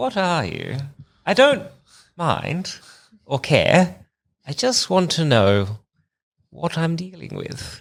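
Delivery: confiding private aside, as for one ear. Speaking in character so only Frisk can hear: saying it under one's breath. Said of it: "under my breath, so only, uh, Frisk, Frisk can hear this".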